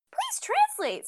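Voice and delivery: mock voice, very high and squeaky like a button.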